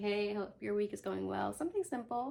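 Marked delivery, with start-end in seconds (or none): none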